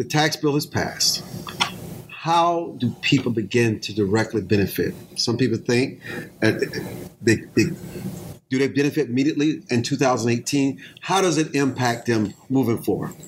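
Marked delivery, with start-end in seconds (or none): 0.0-1.2 slow, weighty emphasis on every word. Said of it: "I say it with emphasis".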